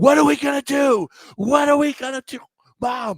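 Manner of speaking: very high, loud, screeching yell. Retelling a poker player's words to his mom in an elevator: imitating someone screaming. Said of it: "He's screaming".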